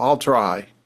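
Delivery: tight, constricted, lilting, hesitant tone that falls. Showing how fear of failure sounds, hesitant, constricted 'I'll try'. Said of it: "it's got a lilt, even in the tone, that's kind of constricted and down".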